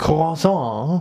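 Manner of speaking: high, slow French pronunciation of croissant. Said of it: "how to pronounce the".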